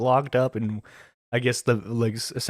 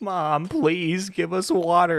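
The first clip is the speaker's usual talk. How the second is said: put-on very slow, high, drawn-out, weepy childlike crying; 7 semitones higher than usual. Joking about kids begging while their mom films: imitating crying kids. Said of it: "the kids are crying, like".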